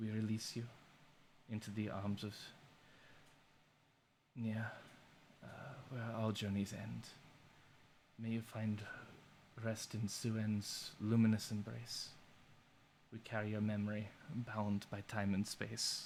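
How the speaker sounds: half-whispered, hushed delivery. Game master voicing a figure stroking the closest Drow's brow, half-whispered prayer. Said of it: "and just whispers like".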